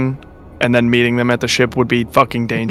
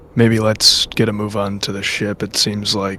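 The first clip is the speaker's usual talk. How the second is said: hushed, very quiet, low murmured aside; 4 semitones lower, 5 dB quieter than usual. In a role-play game, leaning toward a companion, speaking very quietly. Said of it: "just very quietly".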